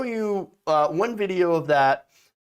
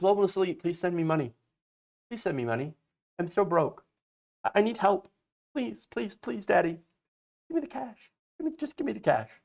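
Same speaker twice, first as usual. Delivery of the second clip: mocking, pleading, begging over and over; 3 semitones higher, 5 dB quieter than usual. Mocking him as he begs viewers for money: mocking imitation of begging. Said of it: "And now he's like".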